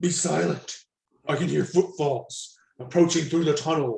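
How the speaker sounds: low, growling, guarded tone. Narrator voicing a character's warning to his companion, in a hushed growl. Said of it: "growled Grignir in a hushed tone".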